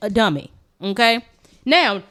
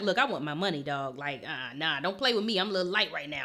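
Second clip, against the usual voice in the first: fussing, chewing-out tone; 6 semitones lower, 14 dB quieter than usual. Retelling how he fussed at someone over owed money: imitating someone fussing. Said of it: "he was fussing him out too".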